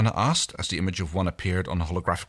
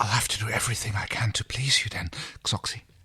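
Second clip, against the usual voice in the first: low, quiet whisper; 3 semitones higher than usual. Reading a character's flirtatious line aloud in a story: low whisper. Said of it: "In a low whisper".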